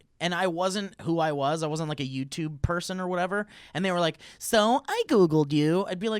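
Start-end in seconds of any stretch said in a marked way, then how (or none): 4.4-5.8 very slow, silly, stupid put-on voice. Imitating a date who says they Googled you: stupid imitation voice. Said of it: "of course not with that stupid voice".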